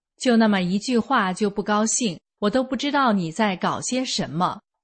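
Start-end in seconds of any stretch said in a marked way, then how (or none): none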